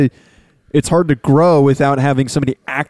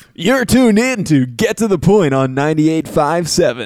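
over-the-top, played-up sports radio announcer delivery. Asked to show the big sports talk voice, doing the played-up sports radio voice. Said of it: "That's the played up one".

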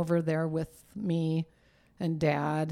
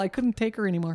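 quick, wry delivery. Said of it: "that sounded terrible".

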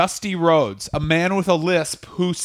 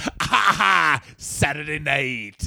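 very slow, drawn-out, fake wrestler-style laughter. Imitating a wrestler walking out with fake laughter: imitating Stevie Ray's fake laugh. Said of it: "he just went".

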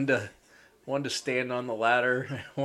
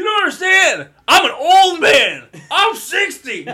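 very high, shrill, very loud swooping yell; 14 dB louder than usual. Imagining Gundy asked why his team is so bad, mock-yelling as Gundy. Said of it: "you don't have to yell in the microphone".

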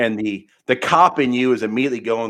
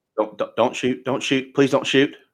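desperate, repeated pleading tone, stammering and tripping on words; 3 semitones higher than usual. Voicing a cornered man begging the player not to shoot: pleading, begging not to be shot. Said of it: "He's like".

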